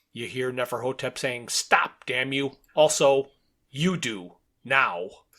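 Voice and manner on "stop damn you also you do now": slow, mechanical machine voice. Reading a story aloud, voicing Neferhotep answering Crowther through a phone: mechanical voice. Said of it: "in the mechanical voice".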